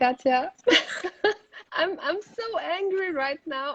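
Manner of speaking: talking through laughter. Host welcomes a guest into a live conversation, laughing while talking. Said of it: "I'm laughing".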